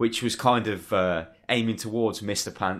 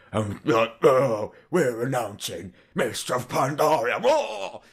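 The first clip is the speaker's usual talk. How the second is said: drawn-out video game villain voice; 4 semitones higher than usual. Imitate the man who voices everybody in WoW making an announcement, in his typical WoW bad guy voice. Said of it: "in his typical WoW bad guy voice".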